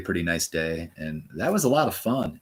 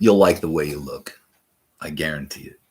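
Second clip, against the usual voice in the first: pitched-up commercial tagline voice; 3 semitones lower, 5 dB louder than usual. Trying out a commercial catchphrase: Men's Wearhouse guy voice. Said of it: "Could I be the Men's Wearhouse guy?".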